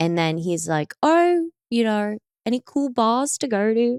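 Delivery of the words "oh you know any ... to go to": put-on Australian accent, casual and slow. Retelling what someone asked, imitating them: put-on Australian accent. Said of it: "That's actually Australian".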